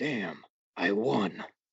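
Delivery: low, deep put-on chest voice. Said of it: "I could actually make this more Waitsy".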